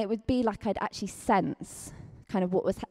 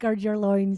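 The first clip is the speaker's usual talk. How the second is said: put-on Scottish accent; 5 dB louder than usual. Asked to say the phrase in a Scottish accent: Scottish accent. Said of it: "that would be really good in a Scottish accent".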